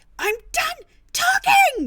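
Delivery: very high, very loud, shrill scream. Voicing a character who refuses further talk: screaming back. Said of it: "she just screams back".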